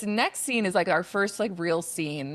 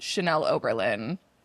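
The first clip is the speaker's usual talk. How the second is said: usual speaking voice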